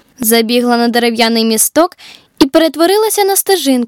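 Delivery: plain reading voice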